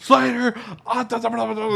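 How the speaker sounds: put-on angry fast talking. Retelling a movie scene, imitating an angry, fast-talking police chief.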